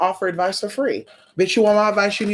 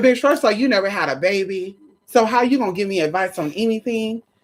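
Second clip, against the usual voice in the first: ordinary talk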